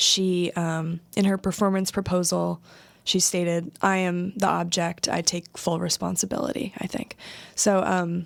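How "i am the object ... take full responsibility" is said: normal talking voice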